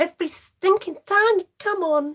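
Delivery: loud, high American accent.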